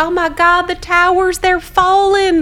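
put-on very strong Southern accent, very high and loud. Retelling a woman coming into a work seminar, in a very Southern accent. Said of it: "this woman with a very Southern accent".

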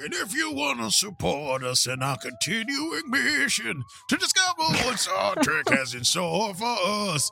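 dramatic, put-on starship captain voice, swooping high. Podcast host reads the call to support the show in a put-on voice. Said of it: "it's very hard to do that voice for so long".

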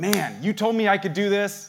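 bold, audacious, unashamed delivery. Showing how to come at God in prayer: shameless audacity. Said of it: "a shameless audacity".

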